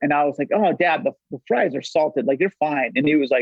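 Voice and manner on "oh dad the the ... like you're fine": ordinary talk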